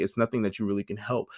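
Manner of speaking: ordinary talk, nothing marked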